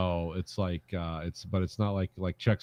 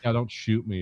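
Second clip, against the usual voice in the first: mock really sad pleading, higher pitch; 3 semitones higher than usual. Retelling her words to the gunman: imitating a really sad plea. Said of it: "or something really sad".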